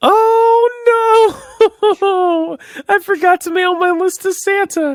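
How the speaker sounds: put-on high, slow voice, "oh" drawn out. After a sip of water, launching into a bit: put-on high voice. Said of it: "you decided to do this high voice".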